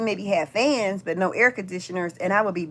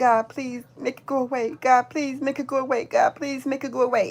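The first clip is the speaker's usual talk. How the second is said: put-on little kid voice, much higher; 4 semitones higher than usual. Recalling praying under the covers as a scared child, in a little kid voice. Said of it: "In my little kid voice".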